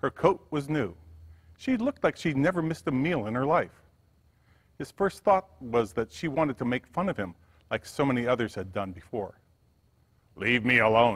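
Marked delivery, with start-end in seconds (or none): 10.4-11.2 deep, low, dismissive growl. A man rebuffs a woman he thinks has come to mock him, growling. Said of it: "he growled".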